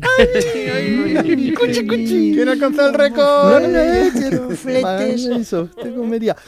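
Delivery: put-on high-pitched, cooing baby talk voice. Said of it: "No siempre tiene este tono de voz, ni esta entonación".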